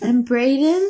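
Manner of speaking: really hopeful tone, a touch mournful. Acting out how a letter writer might add a name: imitating a hopeful, mournful tone. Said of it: "really hopefully, but also kind of mournfully".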